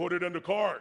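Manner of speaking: deep, low, firm, commanding voice. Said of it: "her voice got deep".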